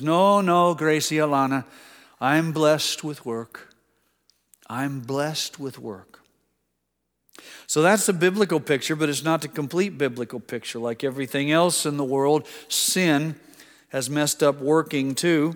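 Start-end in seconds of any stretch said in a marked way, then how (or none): 0.0-6.2 put-on Irish accent, much slower. Retelling a grandfather's reply to his granddaughter's offer of help: Irish accent. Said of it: "in this wonderful Irish accent".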